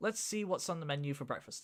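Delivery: plain reading voice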